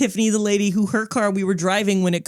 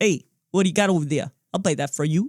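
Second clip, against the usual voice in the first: put-on, pushy New York accent. Describing a merchant in their fantasy game, doing his line in a put-on New Yorker accent. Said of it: "I make that accent".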